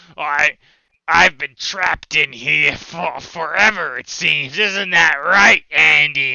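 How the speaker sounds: loud, slow, croaky, frog-like voice. Narrating a game scene to the players, voicing the floating one: froggy voice. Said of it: "the one floating in front of you with the froggy voice says".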